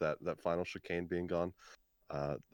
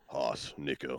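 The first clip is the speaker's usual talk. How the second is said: mock sexy voice, much lower pitch; 5 semitones lower than usual. Asked why the voice dropped, answering in a mock sexy voice. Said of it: "This is my sexy voice".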